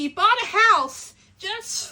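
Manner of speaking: excited passionate yelling, very loud, rising. Talking about a beloved book character, yelling passionately. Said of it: "I'm yelling because I'm like so passionate".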